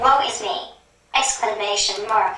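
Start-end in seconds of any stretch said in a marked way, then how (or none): none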